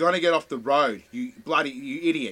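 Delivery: mock angry yelling. Father retelling what he shouted at another driver, retelling an angry shout. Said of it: "because I was so angry before that".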